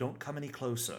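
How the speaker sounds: voice calling out. Voicing a hidden figure calling out from behind a building: voice calling out a warning. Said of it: "is what you hear".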